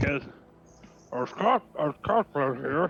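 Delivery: very slow speech through a mouthful, chewing. Voicing a character who takes a big bite of shrimp: talking with mouth full. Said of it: "I take another big bite of shrimp".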